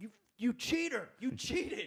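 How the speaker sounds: put-on very high, drawn-out yell of a young child. Retelling being eight years old and accusing someone of cheating: imitating his child self yelling. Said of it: "eight years old, just like".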